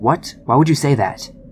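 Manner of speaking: mock-angry voice, abrupt, cutting in. Retelling how a woman nearly cut them off, acting out her angry retort. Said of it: "angrily says".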